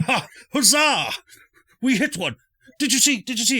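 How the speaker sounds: very high, swooping, triumphant excited cheering. Voicing hidden attackers who just landed a hit: cheering in character. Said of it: "all just sort of cheering".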